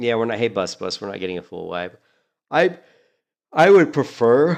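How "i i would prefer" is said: very loud, very slow, high words spoken while yawning. Mid-sentence, the speaker talks while yawning. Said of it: "Sorry, I'm yawning again".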